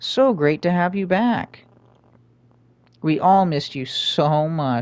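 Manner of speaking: sarcastic-sounding tone. Welcoming another speaker back after technical difficulties: sarcastic-sounding tone. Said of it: "That sounds so sarcastic".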